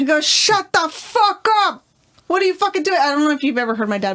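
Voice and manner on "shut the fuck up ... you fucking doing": mock furious, drawn-out, pitched-up angry yell. Imitating a dad yelling at home, imitating his dad yelling. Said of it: "he sounds like Joe Pesci".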